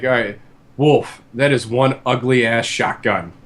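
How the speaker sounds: plain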